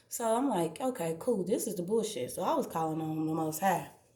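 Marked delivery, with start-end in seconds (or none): none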